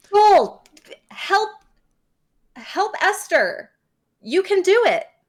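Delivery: high-pitched far-carrying yelling. Calling across a ravine for joel to help esther, yelling across a ravine. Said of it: "you're yelling that across the ravine".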